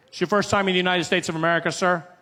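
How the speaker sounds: fast, rapid-fire, rattled-off official tone. Retelling how the officer at the passport desk rattled off questions: imitating an officer rattling off questions. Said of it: "he starts rattling them off".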